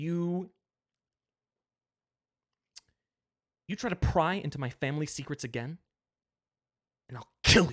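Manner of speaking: muttering under the breath. Acting out what a character says, muttering under his breath. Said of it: "him muttering under his breath".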